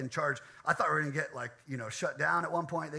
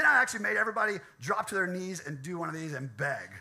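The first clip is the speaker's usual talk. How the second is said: normal talking voice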